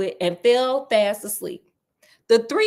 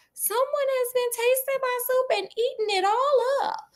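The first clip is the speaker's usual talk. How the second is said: very high, squeaky little bear cub voice; 13 semitones higher, 3 dB quieter than usual. Reading the three bears story aloud, voicing the teeny tiny bear: teeny tiny bear voice. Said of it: "Does that sound like teeny tiny bear?".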